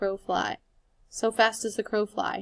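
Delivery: plain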